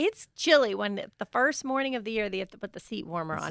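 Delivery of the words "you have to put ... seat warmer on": normal talking voice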